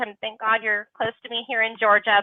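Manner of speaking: plain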